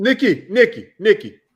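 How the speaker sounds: high-pitched yelling, repeated. On a live podcast, a speaker yells for Nikki: yelling a name. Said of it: "You don't have to yell".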